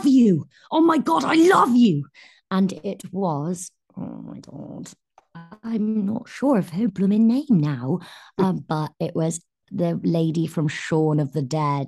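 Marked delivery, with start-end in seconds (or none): 0.1-2.1 loud, high-pitched shout at full tilt. Retelling standing up and shouting to the lady from a film, retelling a shout. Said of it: "as soon as I'd stood up and shouted".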